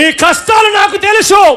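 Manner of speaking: shouting.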